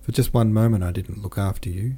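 ordinary delivery

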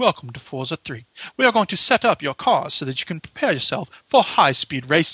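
very posh, upper-crust game narrator voice. Describing a racing game's narrator and imitating him, posh Forza narrator voice. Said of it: "He's got this very posh accent".

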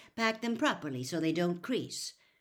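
plain reading voice

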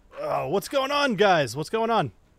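groggy just-woke-up voice. Role-playing Elric as he wakes up and asks the guys: groggy Elric just waking up. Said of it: "He's kind of groggily waking up".

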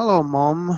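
put-on small child voice speaking with a British accent. Recalling how they talked as a child after coming back, little kid's British accent. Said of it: "I talked like a little Brit".

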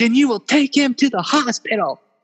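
put-on very high, shrill, piercing, furious scream. Retelling a driver yelling at a friend after an accident: imitating someone screaming. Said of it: "she just keeps screaming that over and over".

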